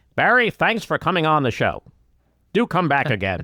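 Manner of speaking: put-on news anchor voice. Thanking a guest at the end of the show: Chris Wallace voice. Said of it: "I do Chris Wallace".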